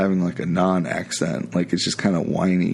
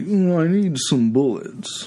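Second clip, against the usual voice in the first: high, slow, stretched-out mock posh accent. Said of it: "What was he like?".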